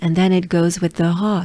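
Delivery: normal talking voice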